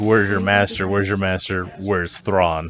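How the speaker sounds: plain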